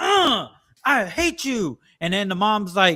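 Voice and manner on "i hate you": put-on high, very slow, drawn-out child's tantrum voice. Describing a kid in a store with his mom: imitating a child's tantrum. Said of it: "the kid's going throwing a tantrum".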